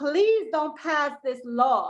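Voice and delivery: put-on pleading voice. Retelling mothers at a hearing crying out to commissioners: imitating people pleading. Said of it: "crying out".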